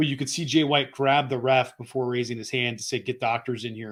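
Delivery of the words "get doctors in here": ordinary talk, nothing marked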